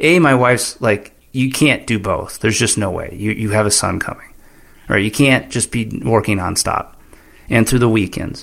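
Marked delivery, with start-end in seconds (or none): none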